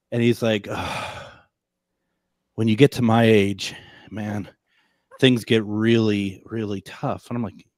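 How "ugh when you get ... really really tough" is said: put-on sighing delivery. Retelling a tired photographer's complaint: imitating a sighing photographer. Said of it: "every sentence starts with a, a sigh".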